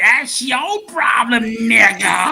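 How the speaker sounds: loud, slow, high character voice. Showing another speaker a practiced voice: Stink Meaner voice. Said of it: "Here's my Stink Meaner voice".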